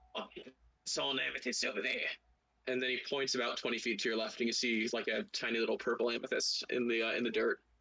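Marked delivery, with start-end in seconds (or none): 0.1-2.0 put-on crab voice with a British accent. The narrator voices a crab talking to the players; British crab voice. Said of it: "the crab turns around and he says".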